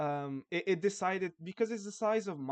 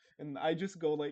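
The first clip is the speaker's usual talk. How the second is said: plain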